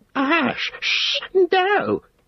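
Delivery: thin, hissing, very high, frightened angry shriek. Reading a story, he suddenly sees what Sam is doing; frightened, angry cry. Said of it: "he cried".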